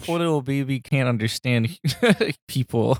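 put-on patronizing, talking-down baby talk. Improvising how people in the 1950s would react, patronizing baby talk. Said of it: "I don't appreciate you patronizing".

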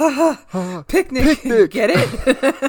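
mock very slow, loud, high, laughing through words. Retelling a movie scene where the actor starts laughing: imitating a character laughing. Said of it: "then he starts laughing like".

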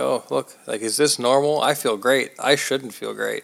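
ordinary talk

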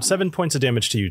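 ordinary talk

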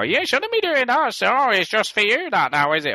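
play-acted shrill whingeing whine, pitched very high. Retelling how Ginny complains about Facebook use: imitating Ginny whinging. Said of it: "Ginny would just whinge at me and go".

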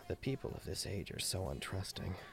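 barely audible, very quiet mutter under the breath. Voicing a character overheard after a natural twenty: muttering very quietly. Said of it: "he mutters it very quietly".

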